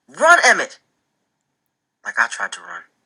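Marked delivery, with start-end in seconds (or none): 0.2-0.8 shrill, very high, loud hollered cry. Reading a story aloud, the narrator calls a warning: hollering. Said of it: "I holler".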